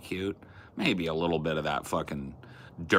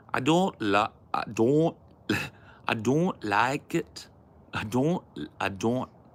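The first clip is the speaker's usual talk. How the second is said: rough attempted Scouse accent, pitched up; 6 semitones higher than usual. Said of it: "Now do a Scouser".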